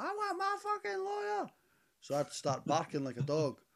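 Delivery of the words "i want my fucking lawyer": put-on, very high, shrill shouting woman's voice. Speaker recalls the woman in the next cell, imitating a woman shouting. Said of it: "she kept shouting".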